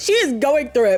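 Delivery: ordinary talk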